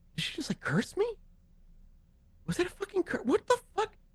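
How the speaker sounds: rushed, fast grumbling mutter under the breath. A game narrator voices a man left behind as the player walks away, muttering under his breath. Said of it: "you hear him under his breath".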